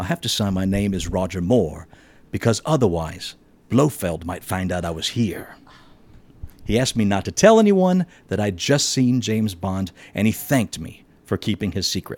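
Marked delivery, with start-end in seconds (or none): 0.0-5.5 hushed, quiet, confidential murmur. Retelling what Roger Moore whispered at the airport: hushed voice. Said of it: "in a hushed voice said to me".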